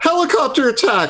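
very high, shouted battle yell. Playing a character who starts spinning his sword: yelling in character. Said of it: "And I yell".

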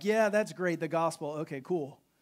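put-on flippant, dismissive tone. Acting out someone treating communion flippantly, in a lazy, dismissive tone. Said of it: "like lazily".

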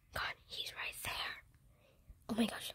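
very quiet, hushed, breathy whisper. Hiding in a dark club from players following in Brookhaven: whispering. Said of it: "why am I whispering?".

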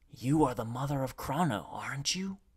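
secretive, hushed half-whisper. Narrator reads the messenger's question to her in the corridor, half-whispering. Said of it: "he whispered".

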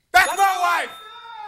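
screaming. Claiming a clue is about his wife to get attention: screaming. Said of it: "you're gonna get my attention by screaming out".

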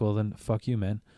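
ordinary talk, nothing marked

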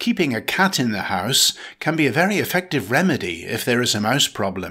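ordinary delivery

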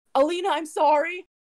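high, loud yell, calling out. Grappled by orcs, your character yells out to Alina: yelling out. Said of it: "So I'm gonna yell out to Alina".

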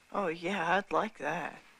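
slow, high, sarcastic, insincere drawl. A son answers his mother's idea about the mascot costume, sarcastic. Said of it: "I was being sarcastic".

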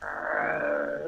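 low creature growl. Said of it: "I just kinda growled".

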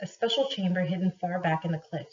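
plain

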